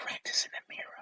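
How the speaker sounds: barely voiced, hushed, secretive whisper. Retelling advice someone leaned in close to give: imitating a whisper. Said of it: "And he whispers it to me".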